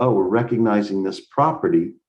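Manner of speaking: plain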